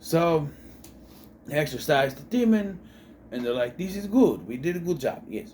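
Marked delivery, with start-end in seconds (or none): 3.8-5.5 put-on Italian accent. Retelling a movie scene after the exorcism, in an italian accent. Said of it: "I like doing the Italian accent".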